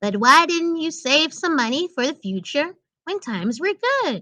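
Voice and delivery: high, small cartoon squirrel voice. Reading out a pictured squirrel's line, in a little squirrel voice. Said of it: "I'm gonna try my best to do a little squirrel voice".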